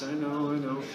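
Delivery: plain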